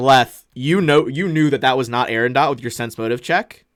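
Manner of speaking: plain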